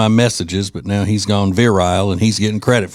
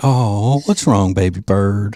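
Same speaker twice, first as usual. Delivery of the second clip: slow, sarcastic, sugary sweet pet-talk voice. Showing how they say the nickname to someone, sarcastically sweet. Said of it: "I'm going to say it sarcastically yeah. sweet like that".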